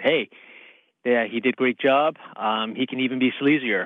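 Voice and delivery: ordinary talk, nothing marked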